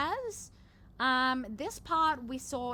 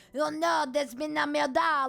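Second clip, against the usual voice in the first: loud, bad put-on French accent; 3 semitones higher, 6 dB louder than usual. Showing the French accent they love putting on: bad fake French accent. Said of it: "like the shitty French accent where like".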